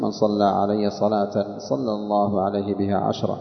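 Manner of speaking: ordinary talk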